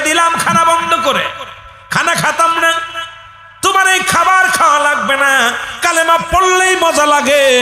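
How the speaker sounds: high, sneering, mocking, cruel-sounding voice.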